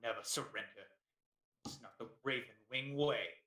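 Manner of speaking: sneering tone. A game narrator voices a character answering the player, sneering. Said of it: "he sneers and says to you".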